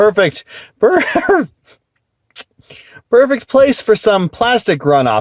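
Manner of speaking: high voice, talking through barely held laughter. Looking at a plastic item that makes you laugh, laughing while talking. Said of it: "I can't even look at it b-, without laughing".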